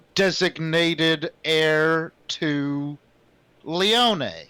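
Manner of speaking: flat, cold robotic machine voice, very slow. Narrator voicing a computer's announcement to a player, cold computer voice. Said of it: "a cold computer voice says".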